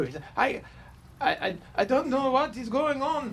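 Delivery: fake Swedish accent, high pitch. Narrating a scene, voicing the new compatriot after a gasp: Blue's Swedish accent. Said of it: "It's my best Swedish voice".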